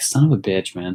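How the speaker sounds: normal talking voice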